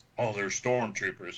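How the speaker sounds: ordinary talk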